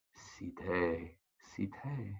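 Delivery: tiny, very small, soft voice calling out. Storyteller voicing a character calling the heroine's name, in a very small voice. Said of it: "in a very small voice".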